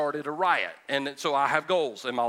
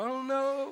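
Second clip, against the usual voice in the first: put-on sobbing, higher and quieter; 9 semitones higher, 5 dB quieter than usual. Retelling waking up in a bathtub as a child: retelling own crying. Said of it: "I was crying".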